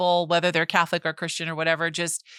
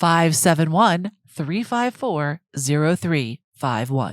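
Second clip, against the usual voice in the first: radio announcer voice with on-air delivery; 3 dB louder than usual. Podcast co-host repeats the show's phone number for listeners, good radio voice. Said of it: "that's good voice".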